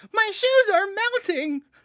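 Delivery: arch nerd voice, shrill, very high and loud. Quoting a guy's line from a performance he admires, arch nerd voice. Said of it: "he's got this like arch nerd voice".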